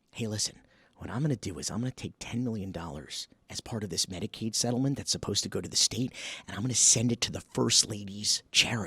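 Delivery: hushed voice. Showing the whisper test on a shady money plan: whispering. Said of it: "so this is the whisper test".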